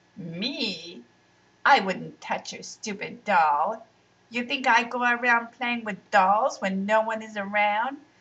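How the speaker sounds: laughing, stretching out "me". Riaz, accused by Shala of breaking her doll, answers laughing. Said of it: "laughed Riaz".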